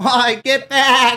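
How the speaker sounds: shrill, very loud, high-pitched shriek. Picturing a nanny shouting at attacking ninjas: Fran Drescher voice. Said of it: "I just picture Fran Drescher going".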